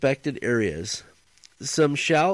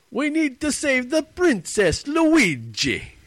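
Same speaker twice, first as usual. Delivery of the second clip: cartoon Italian accent, very high, swooping, stretched out; 12 semitones higher than usual. Teased for thinking he's Italian, he answers with a Mario impression. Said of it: "He thinks he's Mario".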